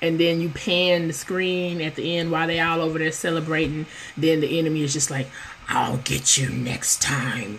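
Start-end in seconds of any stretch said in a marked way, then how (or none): 5.7-7.6 creaky, low, slow, drawn-out little demon voice. Describing a story's ending where the enemy speaks: little demon voice. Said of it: "In their little demon voice".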